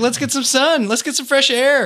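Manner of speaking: very high, manic, cheerful chirping voice.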